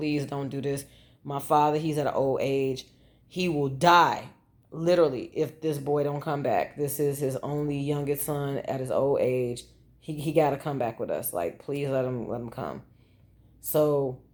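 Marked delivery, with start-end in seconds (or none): none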